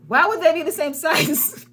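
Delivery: loud, indignant, snapping retort tone.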